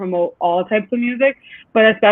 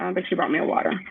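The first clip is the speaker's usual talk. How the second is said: usual speaking voice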